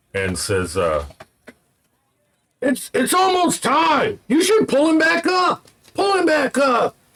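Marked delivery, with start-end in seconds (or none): 2.6-6.9 very high, carrying call. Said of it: "one of the guys calls out from the upper balcony".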